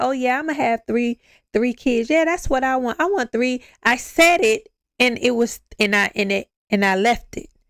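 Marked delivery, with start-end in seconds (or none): 0.0-3.6 quick, casual, offhand matter-of-fact delivery. Speaker acting out her past self's words, retelling a casual remark. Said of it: "I said it like just saying it like".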